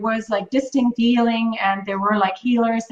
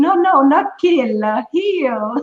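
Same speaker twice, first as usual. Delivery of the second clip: sexy put-on French accent, higher and slower; 4 semitones higher than usual. Quoting a man who offered to heal them, sexy French accent. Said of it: "in his very sexy French accent".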